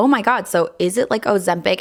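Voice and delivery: ordinary talk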